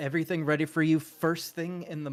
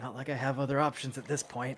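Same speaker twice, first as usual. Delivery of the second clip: mumbled low, muttered under the breath; 2 semitones lower, 4 dB quieter than usual. The escort's leader relaxes a little bit: muttering under his breath. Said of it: "he kind of mutters under his breath".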